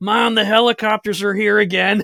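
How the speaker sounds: excited high, loud voice. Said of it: "and he's like".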